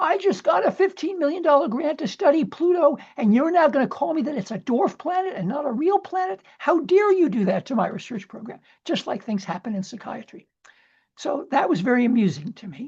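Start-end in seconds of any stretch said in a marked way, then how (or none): 0.0-8.6 high-pitched, angry, yelled rant. Retelling how scientists reacted to the pluto vote: imitating an angry yelling scientist. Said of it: "they yelled and screamed".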